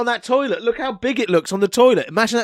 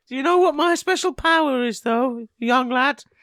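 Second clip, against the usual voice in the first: put-on old-lady character voice, pitched high; 5 semitones higher than usual. Introducing a made-up grandma character: Grandma Sprinkles voice. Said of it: "I'm Grandma Sprinkles".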